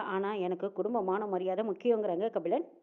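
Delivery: normal talking voice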